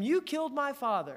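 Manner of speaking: restrained, hate-filled cry. Retelling a movie scene where Luke fights Vader, imitating Luke Skywalker screaming. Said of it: "he screams at him".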